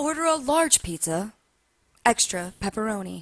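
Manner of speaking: put-on radio DJ announcer delivery. Describing how radio station hosts talk to you, imitating a radio announcer voice. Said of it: "Like that's how they talk to you".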